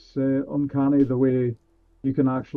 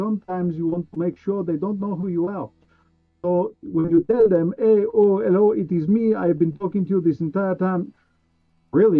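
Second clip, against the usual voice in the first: heavy, put-on French accent; 5 semitones higher than usual. Switching from a Russian voice to a Frenchman, speaking in a put-on French accent. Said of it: "now I'm all the way over to a Frenchman".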